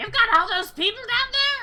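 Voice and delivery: shrill, very loud, high belted goblin voice. Narrating a game scene, the speaker voices Lysanthier in a goblin voice. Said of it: "That's that's the best goblin voice I've got".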